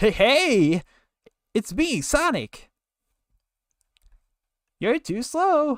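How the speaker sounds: very high-pitched, loud squeaking voice. Voice acting for chat, a squeaky Sonic voice. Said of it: "it started to squeak".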